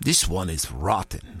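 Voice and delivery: low muttered aside. Al-wangeri tosses aside a book of hadith, muttering. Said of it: "Al-Wangeri muttered".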